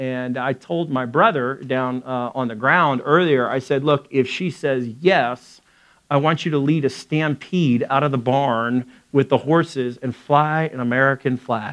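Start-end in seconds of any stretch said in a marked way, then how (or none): none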